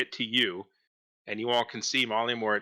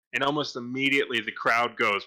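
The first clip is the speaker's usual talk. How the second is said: ordinary talk, nothing marked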